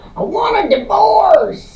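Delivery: slow, high-pitched shouting. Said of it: "Very much in that, that voice, too".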